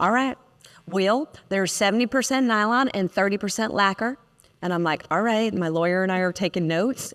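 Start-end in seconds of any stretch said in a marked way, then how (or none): 0.0-4.2 put-on thick, genuine, strong Southern accent. Retelling a call to Ted about a product's contents: imitating Ted's Southern accent. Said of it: "Ted was so Southern".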